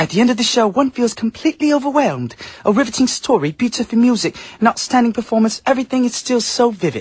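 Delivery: put-on British accent. Speaker reads aloud a newspaper review of a Korean rock musical, British accent. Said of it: "I did a British accent for Beijing Times".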